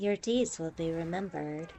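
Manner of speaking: acted, patronizing, condescending game announcer voice. Describing the voice a game uses on the player, mock-condescending game voice. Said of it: "It's like condescending".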